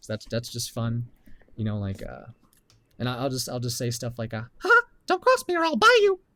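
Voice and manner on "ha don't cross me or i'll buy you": very high, loud, unhinged deranged cartoon voice shriek. Showing a voice they do for fun, deranged South Park Mickey Mouse voice. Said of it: "I kind of make it sound more deranged".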